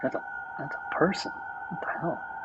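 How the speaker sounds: high, hushed, shocked, horrified whisper.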